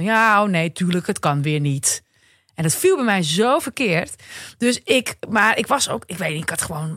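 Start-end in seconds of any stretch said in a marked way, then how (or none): 0.0-2.0 mock grumbling, much slower. Retelling how a teenager answered the speaker's suggestion, imitating a grumble. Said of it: "en toen bromde hij iets".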